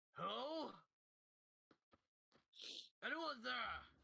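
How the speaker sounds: nervous half-orc voice, very high, creaky, rough. Voicing a sweating half-orc knocking at the door: nervous half-orc voice. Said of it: "you hear him go".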